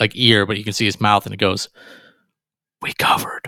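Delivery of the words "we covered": imitated whisper, quieter. Retelling what a player whispered into a teammate's ear: imitating Luka Garza whispering. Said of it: "whispers into, like, another teammate's ear".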